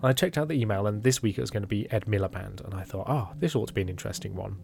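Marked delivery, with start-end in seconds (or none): none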